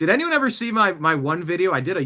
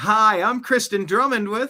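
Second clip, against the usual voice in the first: put-on female news reporter cadence, higher pitched; 5 semitones higher than usual. Repeating a news reporter's intro line: imitating Kristen Drummond's reporter voice. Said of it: "I love the female news reporter voice".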